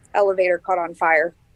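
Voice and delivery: ordinary talk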